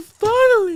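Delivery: very high, sobbing cry. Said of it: "I was crying 'cause I was like".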